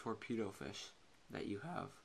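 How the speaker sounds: soft, cracking, half-whispered voice. Speaker explaining a trading card game, voice cracking. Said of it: "Sorry, voice crack".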